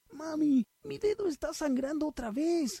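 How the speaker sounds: shrill, very high shout. A son runs to the kitchen calling to his mother: shouted. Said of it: "gritó Jason mientras corría".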